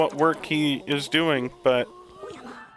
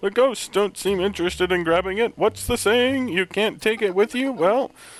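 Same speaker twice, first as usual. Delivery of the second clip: terrible put-on old professor voice, pitched higher. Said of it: "That voice is terrible".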